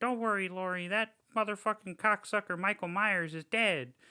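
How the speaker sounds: tiny high little voice. Retelling a movie scene where she answers as Buddy Bear, little Buddy Bear voice. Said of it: "she does like this little voice".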